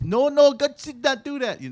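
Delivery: very high, loud, botched attempt at Jamaican accent. Retelling a YouTube video's apple scene, quoting Adam, in an attempted Jamaican accent. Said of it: "That's not Jamaican".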